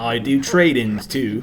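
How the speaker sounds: put-on British shopkeeper voice.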